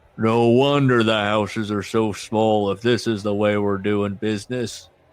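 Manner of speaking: low, gruff tough-guy voice. Retelling a story, voicing a deep voice from the back: Hacksaw Jim Duggan impression. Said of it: "I guess that's my hacksaw Jim Duggan".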